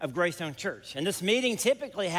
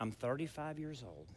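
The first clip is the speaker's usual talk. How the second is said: low, hushed, very quiet secretive tone; 5 semitones lower, 13 dB quieter than usual. Retelling what a man said where nobody else could hear: low hushed voice. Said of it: "In a low voice where nobody else can hear".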